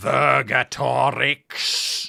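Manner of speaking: voice as if in the head. Narrating a scene to players, voicing a face whose voice seems inside their head. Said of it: "it says in a voice which you are not sure if it's outside".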